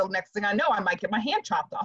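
normal talking voice

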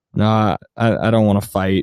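low, flat deadpan with no emotion. Imagining Jesse Plemons turning down a party fight: emotionless Jesse Plemons voice. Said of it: "playing this role with absolutely no emotion".

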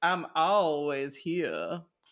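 put-on creepy ghostly voice with southern accent. Quoting a ghost while joking about ghost voices, put-on creepy southern ghost accent. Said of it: "give ghosts like a southern accent".

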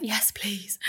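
soft, frightened whisper.

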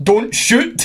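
put-on, very high, exasperated yell. Recalling shouting at a player about to shoot, retelling an exasperated shout. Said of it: "in a sort of exasperated tone".

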